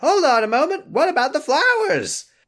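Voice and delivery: pitched-way-up loud cartoon voice. Retelling a video game scene, the speaker plays the other character: Rabbit voice. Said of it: "This is my Rabbit voice".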